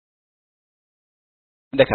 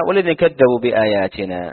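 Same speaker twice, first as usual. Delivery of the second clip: ordinary talk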